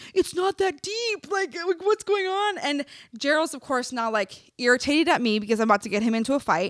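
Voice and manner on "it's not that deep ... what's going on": put-on children's voices, very high, pleading screams. Retelling a confrontation where the kids are screaming: imitating kids screaming. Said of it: "the kids are screaming".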